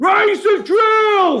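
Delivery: very high, angry shout, like through a megaphone. Narrator reads a shout from a helicopter megaphone, angry voice through megaphone. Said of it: "echoed an angry voice from the megaphone".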